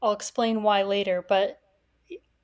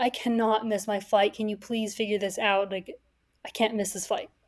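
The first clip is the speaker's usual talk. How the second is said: put-on loud pleading; 4 dB quieter than usual. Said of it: "out loud to both Uber and this guy".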